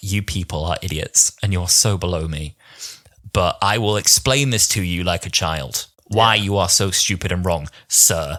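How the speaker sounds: mock stern, condescending, superior lecturing tone. Showing how the Doctor talks down to the tribunal: imitating the Doctor's stern condescension. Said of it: "he manages to give a very stern delivery".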